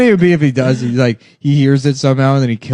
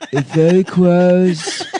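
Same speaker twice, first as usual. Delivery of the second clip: slow, laughing mock impression voice.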